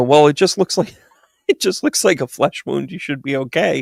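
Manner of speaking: talking while laughing through the words. Retelling what they said to a man who was knocked over: retelling own words while laughing. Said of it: "And I'm laughing".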